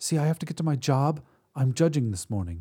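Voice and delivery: ordinary talk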